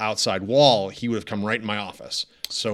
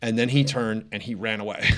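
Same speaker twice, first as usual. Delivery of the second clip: ordinary talk, nothing marked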